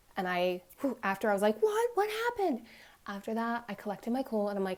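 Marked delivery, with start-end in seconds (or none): 1.6-2.6 mock alarmed, very high, raised, shocked voice. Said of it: "I'm sorry I raised my voice".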